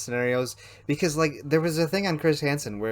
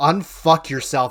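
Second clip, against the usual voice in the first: put-on scream, louder; 8 dB louder than usual. Retelling pulling up beside a rider with no helmet: imitating own scream. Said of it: "and I just screamed".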